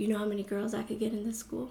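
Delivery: very soft, quiet, hushed stage whisper. Retelling what he said after she refused him: imitating someone half-whispering. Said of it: "he whispers".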